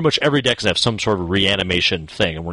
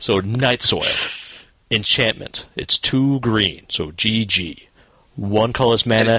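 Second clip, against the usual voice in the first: dramatic movie trailer narrator voice. Describing a Magic card to the others, the speaker uses a movie narrator voice. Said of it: "Movie narrator voice".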